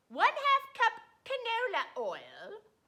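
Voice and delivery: exaggerated fake British accent. Reading London broil ingredients aloud in a very phony British accent. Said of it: "I'm going to read to you the ingredients for the London broil with my British accent that is very, very phony".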